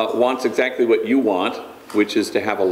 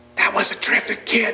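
hushed whisper pitched very high; 12 semitones higher than usual. Recounting a funeral, the speaker points at the coffin and tells the mortician, whispering. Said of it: "in a whisper I say to the mortician".

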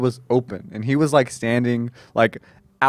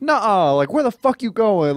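high-pitched, furious, angry outburst, freaking out; 9 semitones higher than usual. Retelling a passenger reacting to a wrong turn: imitating someone freaking out. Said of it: "she started freaking out".

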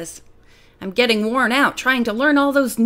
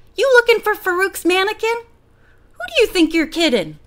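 put-on high-pitched, wizened old man voice; 8 semitones higher than usual. Narrator reads a laughing man on a bench speaking to her: high-pitched voice. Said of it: "In a high-pitched voice".

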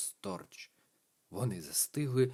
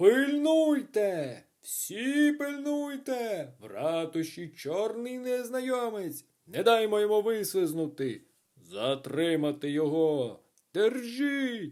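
high, drawn-out, echoing bellow; 8 semitones higher than usual. The sergeant yells through the town hall after a fleeing ghost, yelling so it echoes. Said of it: "зарепетував так, що аж луна пішла".

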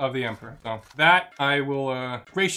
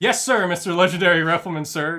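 put-on, loud, words laughed out through snickering; 3 semitones higher, 6 dB louder than usual. Retelling two squad mates saluting a superior, retelling a snickering reply. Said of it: "just as they're like snickering to themselves".

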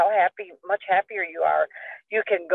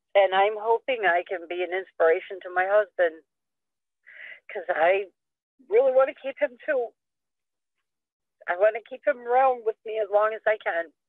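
tearful voice, crying while talking. Speaking about her husband and those who helped her, crying. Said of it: "And I'm sorry for crying".

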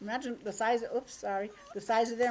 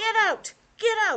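very high, loud, furious angry shout; 10 semitones higher, 6 dB louder than usual. Reading a picture book aloud, voicing an angry little boy, shouting loudly. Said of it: "I loudly shout".

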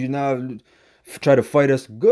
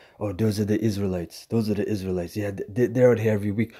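put-on whisper, lower and quieter; 5 semitones lower, 6 dB quieter than usual. Retelling what a passerby said while walking by: imitating someone whispering. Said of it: "He's whispering".

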